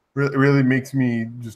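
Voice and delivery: ordinary talk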